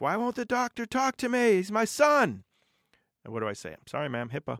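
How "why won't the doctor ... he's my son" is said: mock very high, shrill, loud, furious scream. The speaker recounts a mother in the waiting room yelling at front staff: imitating an irate screaming mother. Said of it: "an irate mother sitting in my waiting room screaming".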